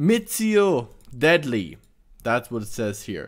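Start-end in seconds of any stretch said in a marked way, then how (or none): 0.0-1.8 slow, careful pronunciation. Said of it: "If I'm pronouncing this wrong".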